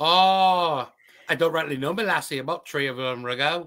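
put-on Irish accent. Imitating a podcast host who says tree for three, mock Irish accent. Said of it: "he definitely has an Irish accent".

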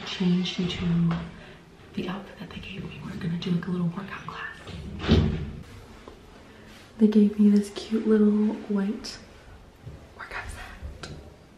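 hushed whisper. Vlogging before a workout class, whispering to viewers. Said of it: "I'm whispering".

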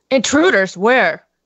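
playacted big, very low put-on voice. Told there are intruders on the ship, the player answers in a really deep voice. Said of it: "I get like a really deep voice".

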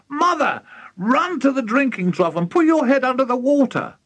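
shrill, very high-pitched shriek. Reading a story aloud, the narrator voices a woman addressing her mother: shrieking. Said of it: "shrieked Mrs. Cranky".

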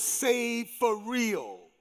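slow, drawn-out stress on the word real.

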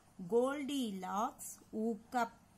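plain reading voice

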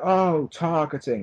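slow, high-pitched whining voice.

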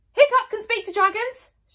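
full-throated, very loud, very high-pitched shout. Fishlegs, after urging Hiccup to take his chance, shouting very loudly. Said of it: "shouted Fishlegs very loudly indeed".

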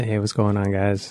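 put-on sexy, late-night R&B radio-host phone voice. A guest greets the hosts and listeners in a put-on sexy voice. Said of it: "Why are you putting on your, like, sexy voice".

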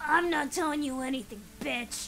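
intense, fierce, very loud defiant delivery. Voicing a character refusing to tell where the horse went: intense delivery. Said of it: "where did that intensity come from?".

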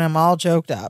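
usual speaking voice

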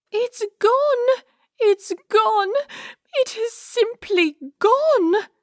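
very high, sniffly fake British accent. Narrator voicing Pearl the poodle, upset that something is gone: high-pitched fake British accent. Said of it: "with a high-pitched, fake British accent".

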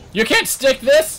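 loud, very high, cracking voice breaking up. Shouting at a teammate during a game, voice cracking. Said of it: "as my voice cracks".

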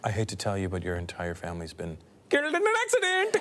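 put-on Indian accent, deep, low, lilting sing-song. Showing how to give bad news, the speaker uses an Indian accent. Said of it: "give bad news with an Indian accent".

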